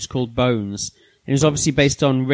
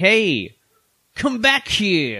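put-on generic American accent, higher pitch; 6 semitones higher than usual. Describing a cartoon's Mario, who has an American accent: generic American accent as Mario. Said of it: "it's a generic".

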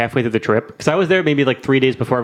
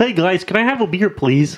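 high-pitched cartoon frog character voice; 6 semitones higher than usual. Suggesting it for every occasion, the speaker demonstrates a Kermit the Frog voice. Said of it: "You should do Kermit the Frog at everything".

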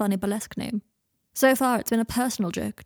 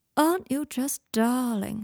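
slow drawl lingering on each drawn-out word; 2 semitones higher than usual. Narrating a story, Draco looks at Harry and speaks to him: drawled. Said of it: "He drawled".

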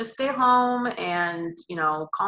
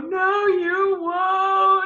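acted very high tearful sob, won't drawn out; 12 semitones higher, 4 dB louder than usual. Retelling leaving the hospital after a nurse's goodbye, retelling a bawling reply. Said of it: "I just start bawling, and I go".

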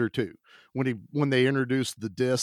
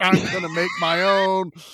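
mock unhinged little outburst, yelped out high; 6 semitones higher than usual. Retelling a scene with an unhinged scientist, imitating someone screaming. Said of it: "He screams, he's like".

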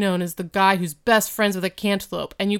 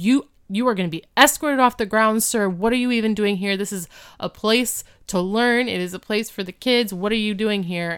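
increasingly worked-up, upset, escalating delivery. Retelling a cafeteria confrontation: imitating someone getting upset. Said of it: "Mister Feeney is getting so upset".

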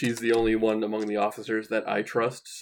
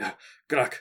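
a little out of breath, slightly winded; 2 semitones higher than usual. Bursting into the quartermaster's office in character, a little out of breath. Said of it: "just a little out of breath".

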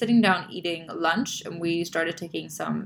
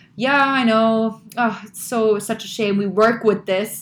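said fairly loudly; 4 semitones higher, 8 dB louder than usual. Retelling a remark a woman made to the speaker across a table, said quite loudly. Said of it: "she said quite loudly".

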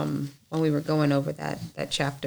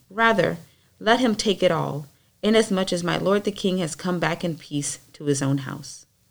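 usual speaking voice

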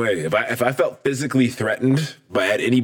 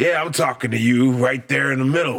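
put-on drunken male speech. Retelling a confrontation, quoting the man who singled him out, imitating a drunk man. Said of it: "he's drunk".

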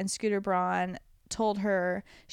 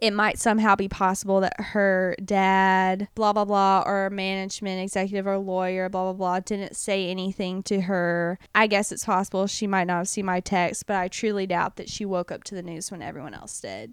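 ordinary talk, nothing marked

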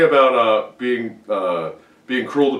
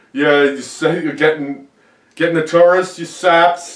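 easy, light, pitched-up holler; 5 semitones higher than usual. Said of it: "yelling at them".

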